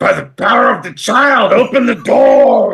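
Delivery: thundering, booming, very high-pitched voice. Player uses thaumaturgy to command the closed door open: booming voice. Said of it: "and in booming voice".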